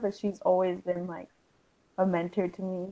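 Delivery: tearful voice, on the verge of crying. Saying what someone has always been to you, on the verge of tears. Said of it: "I'm gonna start crying".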